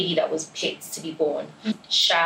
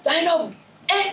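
mock-angry voice; 12 semitones higher than usual. Imitating how they call her when angry, mock-angry scolding of Zainab. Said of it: "And then when they're angry".

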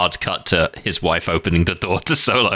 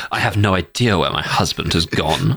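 plain

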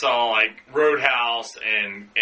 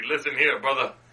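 chill, totally laid-back voice. Doing a Patrick Swayze impression for the others: Patrick Swayze impression. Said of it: "I'm Patrick Swayze".

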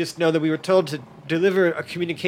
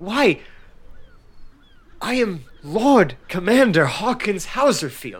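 startled, caught off guard, pitched up; 5 semitones higher, 4 dB louder than usual. Voicing an armored commander asked who he is: taken aback. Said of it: "completely taken aback by the fact".

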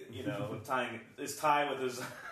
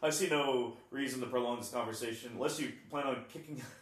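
plain

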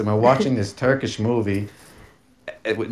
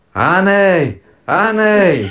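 high-pitched, loud yelling. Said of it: "she starts yelling again".

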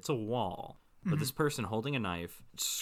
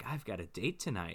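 put-on happy excitement, much quieter; 3 semitones lower, 5 dB quieter than usual. Retelling what a woman said while getting ready, mimicking her being all happy. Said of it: "she's like all happy".

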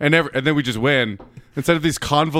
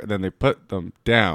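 put-on choppy, halting child-like reading aloud, very low; 7 semitones lower than usual. Mimicking how the other speaker reads aloud, reading like a third grader. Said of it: "reading for the first time like a third grader".

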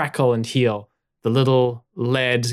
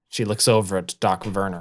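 ordinary delivery

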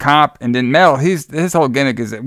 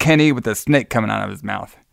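usual speaking voice

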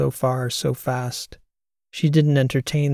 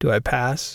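pleased, self-satisfied, much slower. A man answers a woman's teasing as he gets off the tram, pleased with himself. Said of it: "happy with himself".

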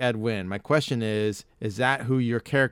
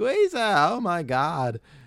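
put-on very slow, high, swooping, sing-song old lady voice; 6 semitones higher than usual. Showing one of the character voices he does, in an old lady voice. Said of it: "it's just like my old lady".

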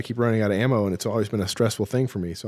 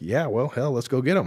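put-on gruff man's voice; 3 semitones higher than usual. Retelling how the chief agreed to go get them, imitating a gruff man. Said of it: "he's kind of a gruff guy".

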